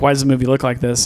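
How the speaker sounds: ordinary talk, nothing marked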